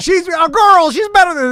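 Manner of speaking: high-pitched, loud, insistent voice.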